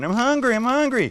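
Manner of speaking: put-on shrill, very high scream of a child. Acting out an imagined hungry little kid, imitating a screaming child. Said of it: "He's screaming".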